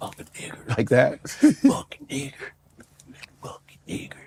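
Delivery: taunting, jeering whisper under the breath. Recalling classmates in high school english class taunting him, retelling whispered slurs. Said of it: "they whispered it".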